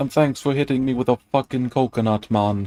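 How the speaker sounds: put-on Jamaican accent. Reading a part aloud to the other speaker, in a Jamaican accent. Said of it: "I thought that was a pretty good Jamaican accent".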